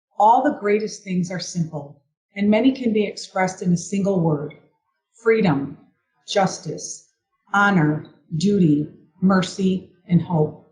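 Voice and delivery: ordinary talk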